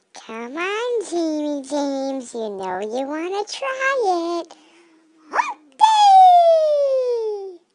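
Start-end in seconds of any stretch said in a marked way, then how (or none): 5.3-7.5 squeaky, very high, loud goofy voice, "day" stretched. Urging another speaker to celebrate Camel Day: funny Camel Day voice. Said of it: "You sound so funny when you do that".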